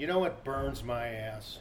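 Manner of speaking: acted flat deadpan delivery. Recalling a man's personal-favorite line he used to say: retelling a deadpan line. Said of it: "He would say in a very deadpan voice".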